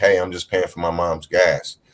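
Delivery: plain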